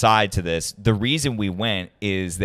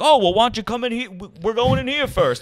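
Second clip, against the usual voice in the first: put-on pitched-up old gentleman voice; 14 semitones higher than usual.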